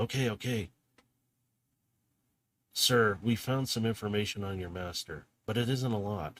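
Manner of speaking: hushed whisper. Voicing a messenger in a broken-up video message: whispering messenger. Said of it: "He's in a somewhat of a whisper".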